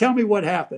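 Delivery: acted snarky tone. Retelling walking in on Jackie crying on the couch: retelling a snarky question. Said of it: "kind of in a snarky way".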